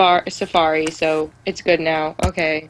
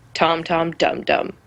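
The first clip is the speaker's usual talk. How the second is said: utterly solemn, dead-serious delivery. Retelling what dad said while driving, imitating his serious voice. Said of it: "he said in the seriousest voice he had".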